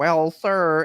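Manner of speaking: put-on nerdy scientist voice. Retelling a movie scene where Sylvester Stallone plays a nerdy scientist, Stallone's nerdy scientist voice. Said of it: "he's doing the voice and everything".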